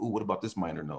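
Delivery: normal talking voice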